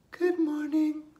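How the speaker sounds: very high, loud, belted puppet-style voice. Leading a two-puppet rhyme, Bella the puppet greets everyone, Bella puppet voice. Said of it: "Hear her say".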